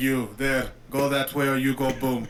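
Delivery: bad, cheesy, stern Russian accent. Imitating a game's main character giving an order: cheesy russian accent. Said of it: "the main character has this really cheesy Russian accent".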